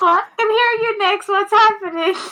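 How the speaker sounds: muffled distant voice. Answering a call through a sending stone: muffled voice from a stone. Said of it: "And it's muffled too".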